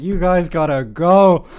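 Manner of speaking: very loud, slow, drawn-out shout. Retelling how a woman stumbled up from behind them, retelling a loud shout. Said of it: "Noticeably loudly from like behind me".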